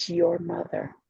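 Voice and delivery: put-on whisper. Retelling what a woman said about the speaker's mother: imitating a whisper. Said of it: "And she whispered".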